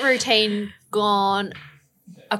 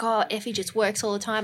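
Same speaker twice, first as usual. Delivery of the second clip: usual speaking voice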